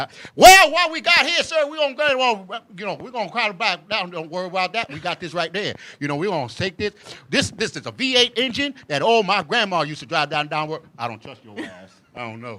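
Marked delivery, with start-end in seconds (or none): 0.0-10.7 very loud, booming, high-pitched Texas salesman patter. Imitating a smooth salesperson he doesn't trust: Texas salesperson voice. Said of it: "if you sound like a Texas salesperson".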